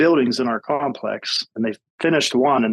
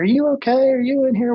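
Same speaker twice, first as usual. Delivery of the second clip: acted yelling, much higher pitch; 13 semitones higher than usual. Retelling entering a loud apartment and calling out for the resident, retelling a yell. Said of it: "we're yelling like".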